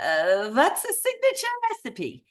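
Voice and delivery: terrible, sing-song put-on Eastern European accent. Retelling a conversation, quoting the other woman in the worst imitation of her accent. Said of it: "I do the absolute worst Eastern European accent".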